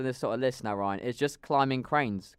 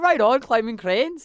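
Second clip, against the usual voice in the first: very high, loud put-on Irish accent; 10 semitones higher, 6 dB louder than usual. Showing the other speaker how they sound: imitating an irish accent. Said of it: "That's how you sound".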